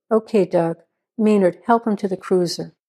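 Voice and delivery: plain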